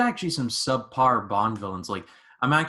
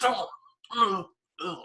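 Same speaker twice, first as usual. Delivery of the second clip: pained, high-pitched grunting. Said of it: "Daniel Craig go".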